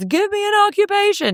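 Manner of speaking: put-on, shrill, very high stage shout. Describing comedy improv in hell: imitating a performer shouting to the audience. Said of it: "they're shouting out to the audience".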